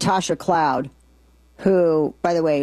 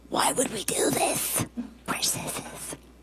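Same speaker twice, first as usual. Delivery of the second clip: slow, hushed, whispered creature voice; 7 semitones higher, 10 dB quieter than usual. Referring to the radio audience and oneself, talking like Gollum. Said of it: "I feel like I'm talking like Gollum".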